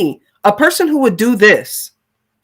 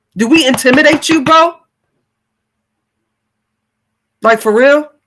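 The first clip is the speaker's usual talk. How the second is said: really angry and heated, higher; 3 semitones higher than usual. Reacting to what another person did: really angry. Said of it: "it's making me really angry right now".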